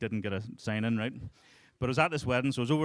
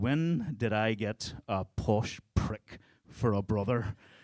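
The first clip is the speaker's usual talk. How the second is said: plain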